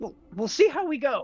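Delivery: very high voice spoken through clenched, gritted teeth. A player, still concentrating, answers Gil's question in character through gritted teeth. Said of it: "through gritted teeth".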